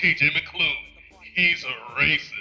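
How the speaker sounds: ominous, foreboding attack-ad narration voice. Joking about making a mock campaign ad, in an ominous campaign-ad voice. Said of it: "then we'll have like the ominous voice".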